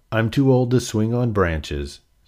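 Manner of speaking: plain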